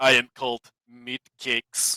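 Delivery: put-on low pitch, Russian accent mixed with Turkish accent. Describing a player's character and quoting his one line: Meatcakes Russian-Turkish accent. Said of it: "like this Russian Turkish accent combination thing".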